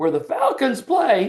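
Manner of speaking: very high, panicked voice that cracks. Retelling how the speaker first answered her, mimicking own voice crack. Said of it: "with that kind of a voice crack".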